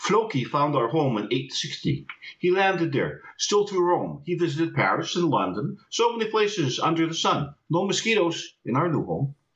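speaking with Icelandic accent. Demonstrating a slight Icelandic accent of one's own, Icelandic accent. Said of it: "I'll try to speak with my Icelandic accent".

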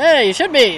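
bad, weak, put-on Scottish accent. Retelling what a Scottish man on a show said, bad Scottish accent. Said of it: "I can't really do a Scottish accent".

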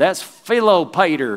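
country-sounding rural southern American accent. Demonstrating a too-country way to pronounce a name: southern american accent. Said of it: "It sounds like I'm in the South in America".

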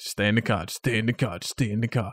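usual speaking voice

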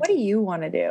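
ordinary talk

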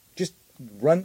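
ordinary talk, nothing marked

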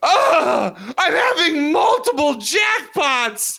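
very high orgasmic moan. Describing how she reacts to multiple jackpots, imitating orgasmic moaning. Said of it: "she's just like total orgasm".

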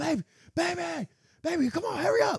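very high, stretched-out, drawn-out hollering. Retelling what he yelled during the struggle: imitating someone yelling loud. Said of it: "he yelling loud too".

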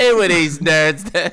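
bad, very loud, put-on British accent. Joking around with co-hosts on their show, in a bad British accent. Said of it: "I'm so bad at fucking British accents".

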